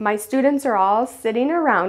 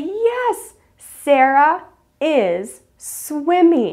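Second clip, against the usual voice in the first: very slow, acted-out excited cheering praise; 6 semitones higher than usual. Speaker acts out praising a child in front of the group, retelling excited praise. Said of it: "I'll be so excited for them and I'll say".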